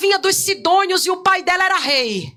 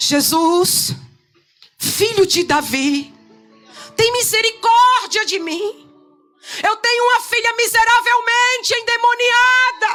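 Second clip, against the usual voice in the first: mock woman's slow, persistent shout, climbing in pitch; 4 semitones higher than usual. Retelling how the woman kept crying after jesus: imitating a woman shouting. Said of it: "ela continua gritando".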